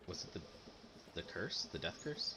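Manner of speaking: very hushed, confiding voice. Retelling a sick woman's question after seeing her, retelling a lowered voice. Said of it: "she kind of like lowers her voice".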